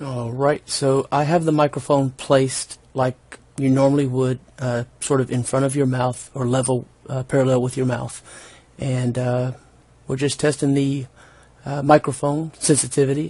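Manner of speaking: soft, fairly quiet, basic conversational talking level. Testing a microphone's sensitivity for viewers, in a fairly quiet voice. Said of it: "I'm talking in a fairly quiet voice".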